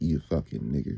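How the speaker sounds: contempt laid on thick, heavy and serious. Showing the serious way an insult gets said, with heavy disdain. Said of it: "you gotta say it with real good disdain on it".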